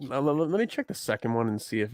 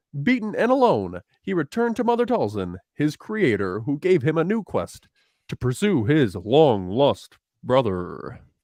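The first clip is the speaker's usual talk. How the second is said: put-on dramatic narrator voice, higher and louder; 5 semitones higher, 5 dB louder than usual. Reading the episode's opening summary aloud: Tom Kane voice. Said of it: "Tom Kane".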